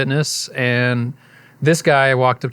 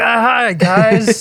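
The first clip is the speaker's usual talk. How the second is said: very high, loud, forced through clenched teeth; 10 semitones higher, 5 dB louder than usual. Retelling a surprise party, imitating own greeting through gritted teeth. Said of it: "grit my teeth and be like".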